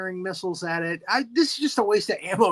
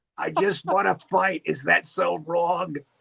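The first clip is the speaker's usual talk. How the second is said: gravelly, creaky, rough, raspy monster voice. Joking about who voiced Anguirus, speaker performs Harvey Fierstein as Anguirus. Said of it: "Harvey Firestein as Anguirus".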